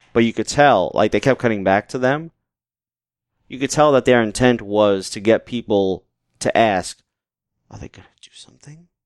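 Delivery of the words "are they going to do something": hushed, low, creepy whispered voice. Describing a wrestling segment, voicing the question the show implies: put-on creepy low voice. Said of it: "Did they have to say it creepy like you did just now?".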